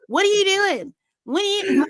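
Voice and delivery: play-acted high, heated, attacking confrontational tone. Retelling Jess going to talk to Johnny: imitating Jess coming in hot. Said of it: "she just came in hot straight away".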